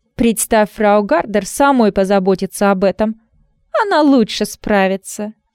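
acid, caustic, cutting sarcastic tone. A woman answers another woman's offer to help with a caustic remark. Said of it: "язвительно заметила Анна".

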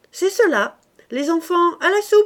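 gleeful, cheerful calling out, very high pitched. A man calling the children to come eat, crying out cheerfully. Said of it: "cria gaiement Mouret".

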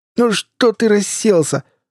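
very high, slow, drawn-out yell. In the overturned van, Bill starts yelling again; yelling again. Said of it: "снова принялся вопить Билл".

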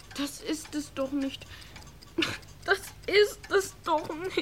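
words forced out through tears, tearful. A son answers his father's scolding, crying. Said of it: "Hör auf zu heulen".

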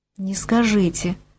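uncertain, unsure tone. Narrating the doctor replying to the patient, unsure. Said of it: "как-то неуверенно отвел глаза врач".

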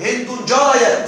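slowly read aloud and spelled out.

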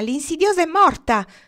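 very shrill, loud crying bird voice. Narrator reads the bird circling the snake, very shrill shouting bird voice. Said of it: "gridò con voce acutissima".

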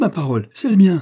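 high, loud, joyful cry of surprise. Narrator reads a character examining a wallet, crying out in surprise and joy. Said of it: "s'écria-t-il".

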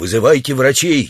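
plain

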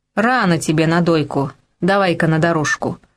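ordinary delivery, nothing marked

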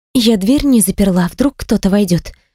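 ordinary talk

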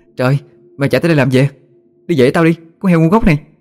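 panting, out of breath. A narrator voices a character who just chased a runaway pig, panting, out of breath. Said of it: "thở hồng hộc nói".

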